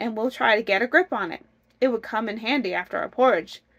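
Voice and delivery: ordinary talk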